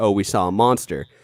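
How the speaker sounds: ordinary talk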